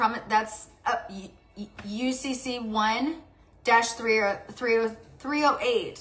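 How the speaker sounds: very slow, stumbling, halting stutter. Speaker telling the listener they won't pay anymore, reading out a code: stuttering. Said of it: "Sorry, I'm stuttering".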